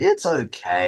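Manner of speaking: lukewarm, ambivalent okay, second syllable "-kay" drawn out. Speaker giving a verdict on a film: ambivalent, drawn-out 'okay'. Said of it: "The longer I draw out that second syllable, the more ambivalent I am".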